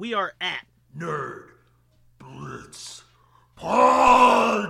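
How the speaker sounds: very loud, very slow, rough, booming demonic rasp. Podcast host gives the show's social handles in his Satan voice. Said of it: "that's normally like my Satan voice".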